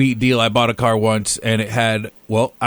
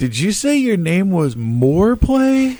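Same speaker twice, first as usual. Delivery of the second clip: mock puzzled, probing, inquisitive tone, pitched up; 8 semitones higher than usual. Retelling a girl in a loud place asking his name: imitating an inquisitive question. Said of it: "looked at me, like, all inquisitive and was like".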